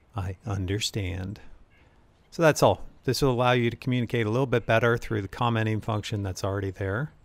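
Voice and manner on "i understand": silky soft voice, lower and quieter. Acting out a reply while explaining the commenting function, silky soft voice. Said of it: "[silky soft voice]".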